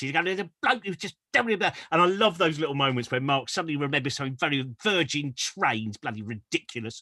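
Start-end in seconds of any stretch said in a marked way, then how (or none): 0.2-1.7 grumbling angry-man voice, pitched up. Retelling a moment from an earlier show: imitating Mark's angry voice. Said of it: "Mark's doing his kind of angry voice".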